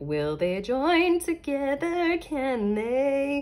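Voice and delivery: high, slow wondering angel voice. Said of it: "she's like".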